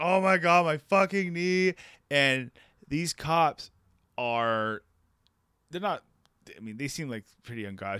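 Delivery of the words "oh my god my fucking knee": mock, high, long, stretched-out screaming cry. Telling a story about hurting their knee in front of cops, retelling own screaming. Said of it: "I'm like screaming like".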